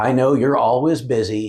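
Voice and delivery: mock passive-aggressive, martyr-like voice. Speaker retelling what she said on the phone, mock passive-aggressive martyr voice. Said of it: "in her best Northeastern WASP passive-aggressive martyr voice".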